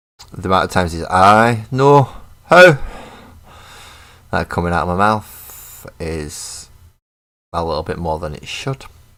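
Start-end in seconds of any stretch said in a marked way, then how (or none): 1.0-2.8 put-on very loud, high-pitched Glaswegian accent. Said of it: "Glaswegians don't ask why, they demand how".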